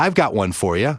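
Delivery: ordinary talk, nothing marked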